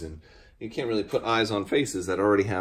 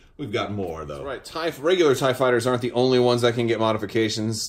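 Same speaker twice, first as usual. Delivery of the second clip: normal talking voice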